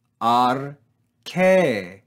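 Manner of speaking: pitch rises then falls on last syllable "-che" of "arche". Reading a Greek word with a circumflex accent: rise-fall on last syllable of arche. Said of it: "We rise and fall on this syllable".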